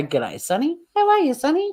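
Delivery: exaggerated, high, swooping cartoon caricature voice. Showing the voice she uses for a character: put-on character voice. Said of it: "But this voice".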